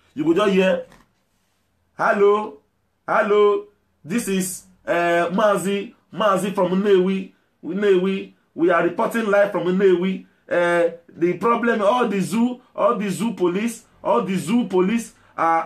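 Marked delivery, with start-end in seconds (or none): 2.0-15.7 halting, slow, repetitive, rambling put-on reporter voice. Imitating an agitator reporting live online: mocking a rambling agitator reporter. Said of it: "they'll be talking rubbish".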